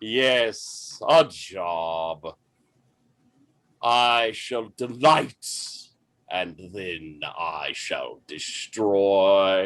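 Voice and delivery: beautiful resonant deep voice. Voicing an actor greeting Miss Steris: beautiful deep resonant voice. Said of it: "a voice so beautiful, so deep and resonant".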